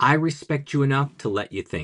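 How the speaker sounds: normal talking voice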